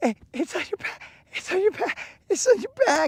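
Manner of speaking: put-on hysterical laughing. Retelling a friend's warning while imitating someone laughing hysterically. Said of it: "laughing, like, hysterically".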